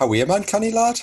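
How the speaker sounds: put-on Geordie accent. Greeting a guest who ran off, in a Geordie accent. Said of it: "It's my Geordie accent".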